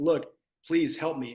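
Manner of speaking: put-on begging, pleading tone. Recalling calling in favors from people at other stores, imitating begging.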